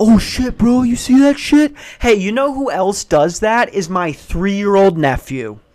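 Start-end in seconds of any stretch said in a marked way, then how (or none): 0.0-1.7 mocking excited voice, higher and louder. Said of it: "you get excited about something being loud".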